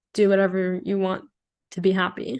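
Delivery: plain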